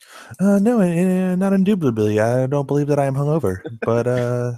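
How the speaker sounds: faint, slight, put-on British accent. Introduced as maybe hungover, a guest denies it in a slight British voice. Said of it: "a slight British voice?".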